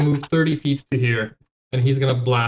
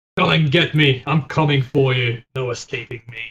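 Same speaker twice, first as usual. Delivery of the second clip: taunting tone in an acted character voice. Playing a character in a fight, calling out to the enemies: taunting enemies in character. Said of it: "start taunting them".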